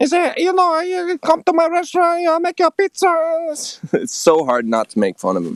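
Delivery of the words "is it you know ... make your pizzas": squeaky, very high, higher-pitched frog voice. Imitating his neighbour, an Italian restaurant owner, in a higher-pitched Kermit the Frog voice. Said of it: "he sounds like Kermit the Frog, but higher pitched".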